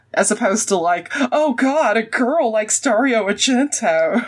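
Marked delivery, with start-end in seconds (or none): 1.1-4.2 slow, drawn-out cartoon big cat voice. Imitating horror fans scoffing at a woman liking horror: sounding like Snagglepuss. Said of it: "you sounded a lot like Snagglepuss at that moment".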